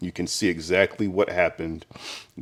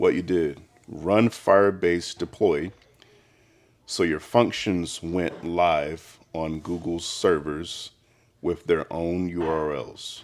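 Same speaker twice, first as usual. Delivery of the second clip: slowed-down, careful, deliberate pace. Repeating the same explanation a second time for the listener, slow. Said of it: "Let's say that again slow".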